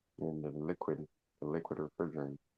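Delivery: barely audible, very quiet, hushed half-whisper. Answering a question in class, quietly: half-whispering. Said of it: "Are you whispering?".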